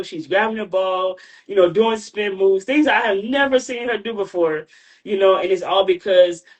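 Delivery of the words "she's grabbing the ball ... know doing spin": usual speaking voice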